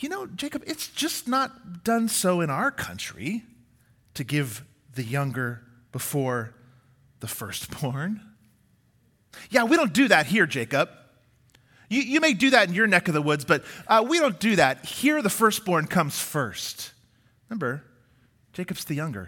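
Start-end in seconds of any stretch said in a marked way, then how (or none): 0.0-16.9 thick, heavy, dripping ironic tone throughout. Retelling Laban's answer when Jacob asks why: imitating Laban's dripping irony. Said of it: "You can hear the irony dripping in hi-, his words and from his voice".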